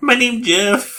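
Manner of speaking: very high, put-on, fake Mexican accent. Imitating a character in the trailers for 22 Jump Street, in a put-on Mexican voice. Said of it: "trying to talk in his Mexican voice".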